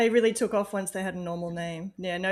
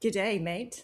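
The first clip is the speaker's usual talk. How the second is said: clumsy put-on Australian accent; 4 dB quieter than usual. Introduced by the host as the guest from Down Under, greeting: bad Australian accent. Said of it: "It sounds like shit when I do it".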